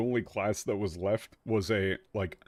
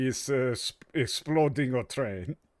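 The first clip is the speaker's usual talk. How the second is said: failed fake French accent drifting into Italian; 3 semitones higher than usual. Mocking a French translator, in a bad French accent. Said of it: "I can't actually do a French accent whatsoever".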